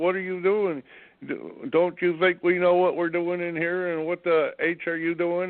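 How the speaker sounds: half-strength, mildly yelled scolding. Retelling how the bookstore lady reacted: imitating someone yelling. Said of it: "she screamed and yelled at me at the top of her lungs".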